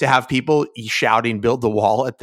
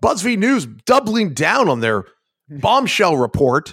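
pitched-up anchor-style reading; 5 semitones higher than usual. Reading a news headline like a TV news anchor: Chris Hayes voice. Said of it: "I inhabited the body of Chris Hayes".

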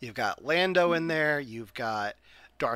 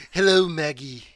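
put-on cartoon baby villain voice, louder; 2 semitones higher, 6 dB louder than usual. Imagining the hooded baby as Stewie Griffin: Stewie Griffin voice. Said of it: "just be Stewie Griffin".

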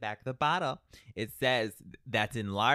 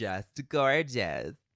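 full-on, heavily sarcastic tone. Asked how someone's hair looks with headphones on, sarcastic. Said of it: "It was full on sarcasm".

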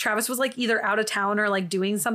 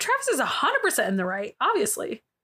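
heavy sarcasm, tongue-in-cheek, swooping sing-song; 3 semitones higher than usual. Commenting on a story about a cheating boyfriend: sarcastic. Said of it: "I'm being sarcastic".

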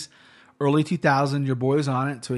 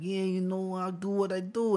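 put-on pitched-up Los Angeles street accent; 5 semitones higher, 6 dB quieter than usual.

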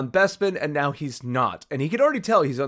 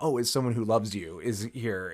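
plain

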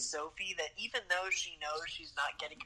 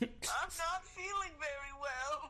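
put-on old woman voice, higher pitch; 11 semitones higher than usual. Retelling a film scene, imitating old Sophie. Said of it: "you sound like an old woman".

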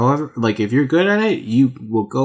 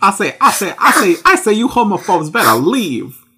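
much higher cartoon rooster voice; 8 semitones higher, 3 dB louder than usual. Picturing Foghorn Leghorn at Pride, doing a Foghorn Leghorn voice. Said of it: "He's like".

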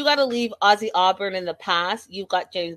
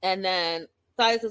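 usual speaking voice

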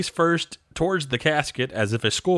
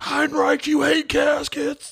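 very high-pitched, shrill yelling; 13 semitones higher than usual. Retelling a ringside fan heckling a wrestler: imitating a fan yelling. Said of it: "a fan there at ringside who yells".

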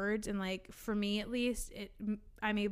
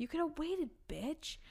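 imitated mutter under breath, much higher; 7 semitones higher, 4 dB quieter than usual. Retelling a customer grabbing an item from her, retelling an under-breath mutter. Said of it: "I literally said under my breath".

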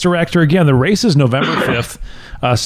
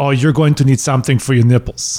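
put-on speaking with a German accent; 3 semitones lower than usual. Retelling what a man said at the start of a race: German accent. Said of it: "and it was this German accent".

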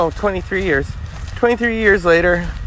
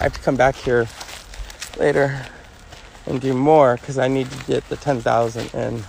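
ordinary delivery

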